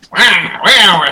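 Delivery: high-pitched put-on voice like something dying. Non-gamer guessing what a game character sounds like, Waluigi voice. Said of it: "like a dying thing".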